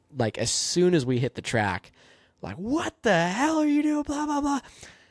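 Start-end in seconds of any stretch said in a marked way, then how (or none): 2.6-4.6 mock screamed tirade, very high-pitched. Retelling an in-car instructor's reaction on the track: imitating Doug screaming. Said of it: "he is screaming at me".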